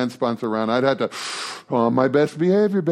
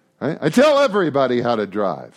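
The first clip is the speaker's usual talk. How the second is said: normal talking voice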